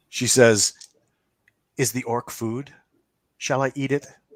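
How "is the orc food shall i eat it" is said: playful woman's voice, much higher. Voicing a character in the story, speak in a playful woman's voice. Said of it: "it's a woman's voice, and it's playful".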